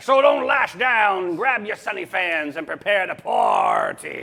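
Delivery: cowboy-like manner of speech. Reading a show intro line in a put-on voice, sounding like a cowboy. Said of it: "You sound like a cowboy".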